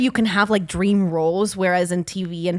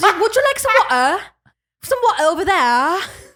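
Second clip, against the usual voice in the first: put-on British accent, higher and louder; 12 semitones higher, 5 dB louder than usual. Retelling how a father talked after england, attempted british accent. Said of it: "the British".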